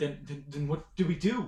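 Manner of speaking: high, frightened, stumbling, terrified stammer. Voicing a kid in a tabletop game who looks up at a player: terrified. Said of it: "he is absolutely terrified".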